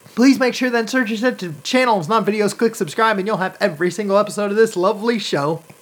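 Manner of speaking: rattled-off auctioneer spiel. Host rushing through an end-of-show plug, talking like an auctioneer. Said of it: "I know I'm talking like an auctioneer".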